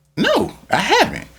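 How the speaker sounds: male voice, high, amazed, gasping, wide pitch range.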